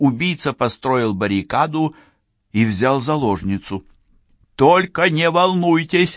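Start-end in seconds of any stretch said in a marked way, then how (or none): 4.5-6.2 high, loud, raised, called-out shout. [name] shouts to the barricaded killer holding a hostage, shouting. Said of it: "крикнула Францискович преступнику".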